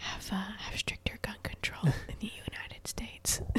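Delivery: very quiet, barely voiced whisper. Retelling what was whispered to a friend during work training: retelling a whisper. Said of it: "I whispered".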